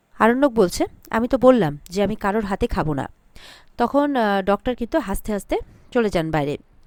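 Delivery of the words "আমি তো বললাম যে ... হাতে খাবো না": plain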